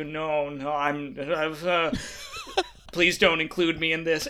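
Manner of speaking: mock awkward, slow, drawn-out, swooping delivery. Retelling how Kevin answered during the banter when Ed looked over at him, imitating someone speaking awkwardly. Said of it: "Kevin just awkwardly goes".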